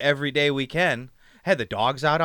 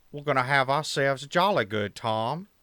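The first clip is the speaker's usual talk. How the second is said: put-on Australian accent. A host opening an episode of their YouTube show, in an Australian accent. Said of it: "about as long as I can do an Australian accent".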